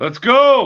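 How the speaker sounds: high, loud, hyped cheering shout.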